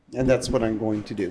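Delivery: ordinary talk, nothing marked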